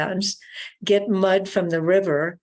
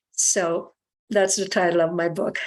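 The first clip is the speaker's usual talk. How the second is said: ordinary delivery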